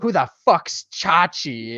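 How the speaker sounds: put-on New York accent. Retelling a scene, quoting a fourteen-year-old gang kid in a new york accent. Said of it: "He's got like a New York accent too".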